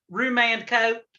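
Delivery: put-on Southern accent. Saying roman coat the way they always do, in a southern accent. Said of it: "I always go southern".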